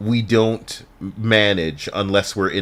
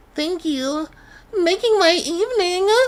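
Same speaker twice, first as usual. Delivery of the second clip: put-on girly voice, much higher. After a viewer's compliment is read out, a speaker replies in a put-on girl voice. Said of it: "I like your girl voice".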